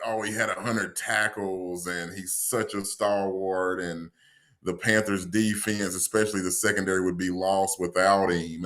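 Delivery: ordinary delivery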